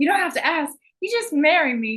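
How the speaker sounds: play-acted gushing enthusiasm, high, eager, sing-song. Retelling a character asking to marry Gordon: imitating an enthusiastic proposal. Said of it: "she's so enthusiastic about it".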